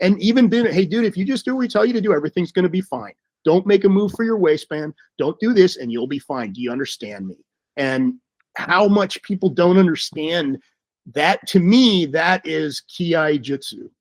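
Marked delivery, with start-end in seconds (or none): 0.7-7.4 assertive, firm, steady and controlled. Showing how to give commands to a suspect: assertive without yelling. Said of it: "assertive without screaming, without yelling".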